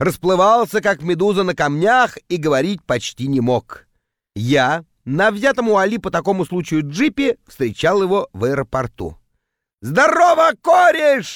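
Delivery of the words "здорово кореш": put-on wild, very high, loud drunken holler. A man arriving at the airport greets the narrator, yelling in a drunken voice. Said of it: "заорал он дурным пьяным голосом".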